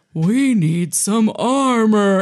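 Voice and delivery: super slow, every word stretched out. Retelling a tense action scene, imitating the agent: super slow and low. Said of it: "says it super slow and low".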